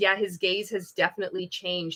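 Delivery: ordinary delivery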